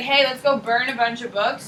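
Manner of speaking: plain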